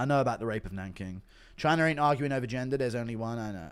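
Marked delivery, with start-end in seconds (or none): none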